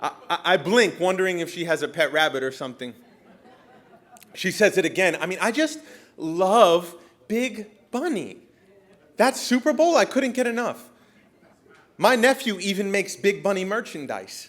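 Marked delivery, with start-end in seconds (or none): 5.2-14.5 high, gushing, electric excitement, love stretched out. Retelling what the excited woman said again at the lunch: imitating an excited older woman. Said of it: "glowing, electric, excited".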